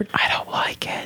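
hushed, soft, breathy whisper under the breath. Recounting a dinner story, quoting what she said: retelling a whisper. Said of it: "and she like whispered".

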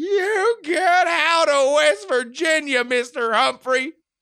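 put-on very high, loud, shrill, rasping old lady whine. An elderly caller confronts a candidate over the telephone, rasping, whining old lady voice. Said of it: "a rasping voice over the telephone. The whining scratch of an elderly lady".

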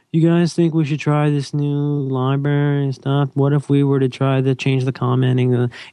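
sad, beaten-down, meek, timid hangdog tone. Suggesting trying a new library to somebody, meek like a beaten dog. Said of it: "you sound really like a beaten dog, and you go".

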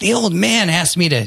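put-on high, slow, drawn-out childlike voice. Showing how a bolded line should be read aloud: kid voice. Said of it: "You gotta do it in the kid voice".

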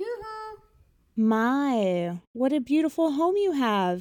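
sugary, fawning, sweet, flattering voice, high and slow. Disguised as a cloth peddler, a woman calls on the fisherman's wife: sweet, flattering voice. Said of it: "she said in her most sweet and flattering voice".

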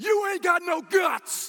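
very high, very loud, drawn-out shrill shout. Retelling how an older sister yelled at older kids: imitating Rachel yelling. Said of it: "She just yells off at them".

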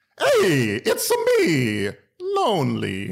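swooping, sing-song, cartoonish Italian accent.

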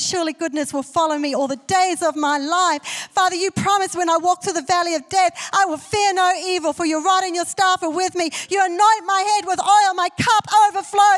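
high, loud, bold proclaiming tone.

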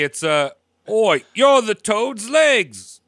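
put-on Cockney London street accent. Offering to put a remark in Cockney, in a Cockney accent. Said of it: "I can put it in Cockney".

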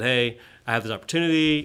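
ordinary talk, nothing marked

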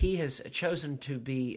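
ordinary talk, nothing marked

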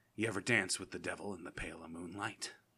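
very low movie-villain voice, dropped way down. Doing a Jack Nicholson Joker impression from the 1989 Batman film. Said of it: "will be Jack Nicholson".

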